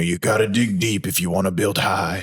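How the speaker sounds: imitated preacher voice.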